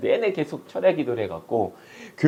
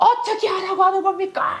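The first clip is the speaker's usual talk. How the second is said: very high, resentful wailing voice. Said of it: "원망의 그 섞인 목소리로".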